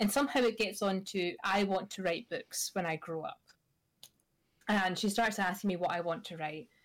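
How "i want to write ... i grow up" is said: plain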